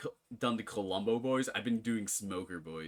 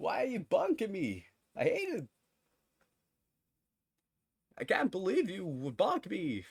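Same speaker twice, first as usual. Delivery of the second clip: goofy, very high, swooping put-on dumb voice; 9 semitones higher than usual. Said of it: "slowly doing the voice. It's a dumb voice".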